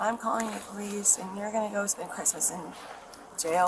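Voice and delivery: plain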